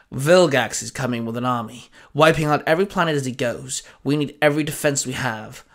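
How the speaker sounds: plain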